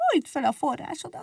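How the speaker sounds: tiny, squeaky mouse voice, very high and soft. Egérke answers Mazsola, who guards his spring, squeaking. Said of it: "cincogta Egérke".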